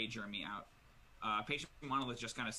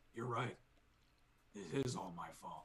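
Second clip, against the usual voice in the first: low-key, understated, self-blaming tone. Game master voicing a character as Moss attacks Patient Monolith: speaking quietly. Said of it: "you hear him quietly go".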